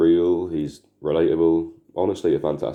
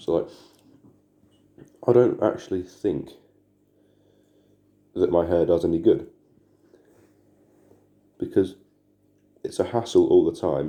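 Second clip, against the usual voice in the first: talking while eating, chewing, mouth full. Talking about their hair while eating an orange, mouth full. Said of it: "I'm like eating an orange".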